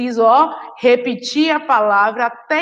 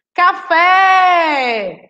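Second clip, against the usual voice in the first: café with fé stressed and long; 6 semitones higher, 4 dB louder than usual. Explaining oxytone words with the example café: stressed, lengthened last syllable fé. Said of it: "Qual foi a parte que eu demorei mais tempo pronunciando? O fé".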